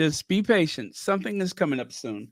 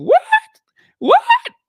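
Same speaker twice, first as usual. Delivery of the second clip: voice shooting up very high and loud; 11 dB louder than usual. Speaker recalls reacting to hearing there were photos from Jamaica, high-pitched voice. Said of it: "that voice went up real high".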